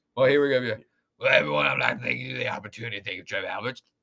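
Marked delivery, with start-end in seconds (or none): 1.2-3.8 rough, creaky put-on voice from the throat. Answering a request to hear him say it: Ed Orgeron impression. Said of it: "I do a good Orgeron".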